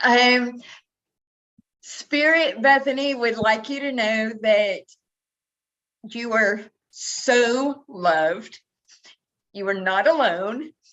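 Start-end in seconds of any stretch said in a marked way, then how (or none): 1.8-10.7 voice on the edge of tears, tearful. Passing on a message from Spirit, tearing up. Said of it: "tearing up already".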